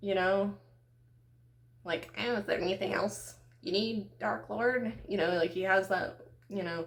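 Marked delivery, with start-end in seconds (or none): 2.2-4.9 eager, servile little demonic henchman voice. Picturing Ben Shapiro as Satan's assistant: demonic little Ben Shapiro voice. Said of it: "how I would picture, you know, like, Satan's little, like, butt buddy assistant".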